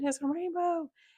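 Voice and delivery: mock thrilled shriek, very high. Telling about her own reaction whenever she gets excited, imitating her own excited scream.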